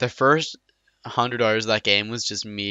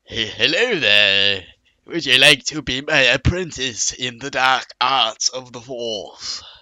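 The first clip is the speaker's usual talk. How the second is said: put-on elderly voice with British accent; 3 semitones higher, 4 dB louder than usual. Retelling walking up to another player in a game: old British voice. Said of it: "his old British voice".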